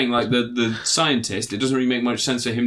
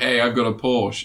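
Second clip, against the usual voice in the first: put-on boastful, showing-off child voice. Acting out a kid who was just given a car: imitating a kid showing off a new car. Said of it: "like a kid that's just been given a car".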